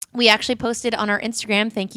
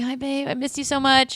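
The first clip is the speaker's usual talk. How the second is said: put-on sleepy but forced-excited voice, higher pitch; 6 semitones higher than usual. Retelling what he said while dead asleep, trying to sound excited. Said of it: "he's trying so hard to be, like, excited".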